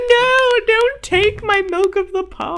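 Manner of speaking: put-on very high, drawn-out sobbing cry. Retelling a character's plea for the drink, imitating sobbing pleading. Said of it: "just sobbing for the drink".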